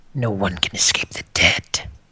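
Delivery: almost a whisper. Voicing a being that speaks of the dead: almost a whisper. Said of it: "Whisper almost".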